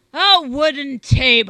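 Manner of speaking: very loud, high hollered shout. The friar answers the other man's question about his dinner, shouted. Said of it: "shouted the friar".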